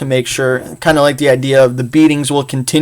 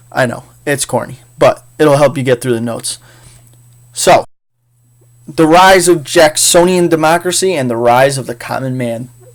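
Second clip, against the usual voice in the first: ordinary delivery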